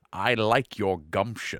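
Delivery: put-on slow, old elf character voice. Retelling a game scene where an ancient elf leans forward: imitating an old elf's voice. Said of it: "he did this voice that I still love".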